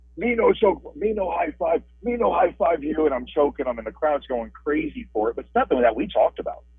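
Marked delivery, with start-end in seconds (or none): 0.2-3.1 mock broken caveman-style screaming, high and drawn out. Recalling choke-slamming an opponent while the crowd went crazy: retelling a scream. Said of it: "choke slammed him and I'm screaming".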